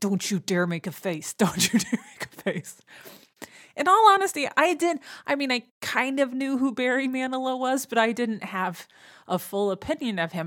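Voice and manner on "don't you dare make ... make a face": hushed muttering under the breath. Retelling a mom's warning before a concert: imitating someone muttering under breath. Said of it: "she just starts under her breath going".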